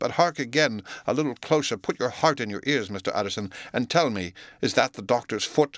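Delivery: plain reading voice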